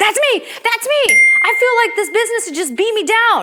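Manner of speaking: excited loud cry.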